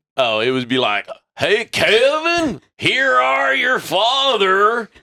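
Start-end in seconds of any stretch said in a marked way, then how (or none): 1.4-4.9 put-on rural Southern drawl, very high and very slow. Retelling how his dad sounded when he called, imitating dad's redneck voice. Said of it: "just a redneck, most redneck ass shit".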